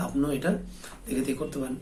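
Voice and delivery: ordinary talk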